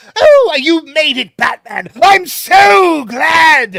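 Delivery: theatrical, hammy, high, very loud, slow and drawn out. Showing a favourite version of the Joker: theatrical Joker voice. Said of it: "that's the version of the Joker".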